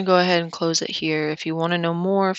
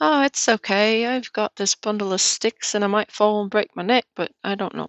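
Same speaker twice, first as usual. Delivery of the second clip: clumsy, butchered, put-on British accent; 4 semitones higher than usual. Acting out a man's imagined thoughts, the speaker slips into a British accent. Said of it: "Why did my voice go British?".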